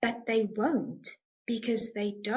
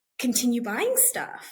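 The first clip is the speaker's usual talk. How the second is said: ordinary talk, nothing marked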